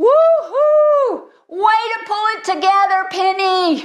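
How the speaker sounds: mock very high, long, drawn-out whooping cheering holler. Retelling how a father shouted to his daughter as she walked off, imitating Chad shouting. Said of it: "Chad shouts".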